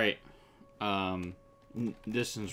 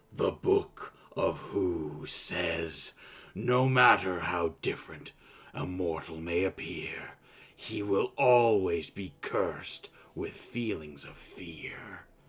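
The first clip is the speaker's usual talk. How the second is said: deep, demonic, beastly voice. Game master voices the beast as it speaks: deep, demonic voice. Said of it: "It speaks in a deep, demonic voice".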